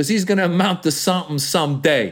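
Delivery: put-on Italian mobster accent. Acting out a mob boss sending kids away: italian mob boss voice. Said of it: "So now I'm doing the Italian guy".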